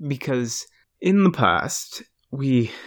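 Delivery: put-on abrupt switch to British accent.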